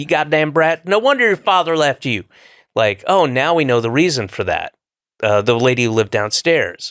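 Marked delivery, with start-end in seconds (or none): 0.0-2.2 heavy, thick put-on Southern accent, pitched up. Recalling a downstairs lady yelling at them as kids, thick Southern accent. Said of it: "in a thick Southern accent".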